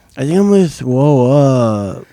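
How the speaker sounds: mock queasy, sick-sounding child voice. Asking a friend how he told the school nurse he felt sick, imitating a sick kid. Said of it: "Did you talk like that?".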